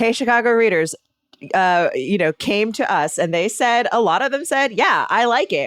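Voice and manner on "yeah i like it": dry, ironic, sarcastic agreement. Reading out what readers wrote in, quoting sarcastically. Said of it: "I'm so sorry that I sound sarca-, sarcastic".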